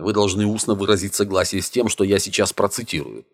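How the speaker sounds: ordinary delivery, nothing marked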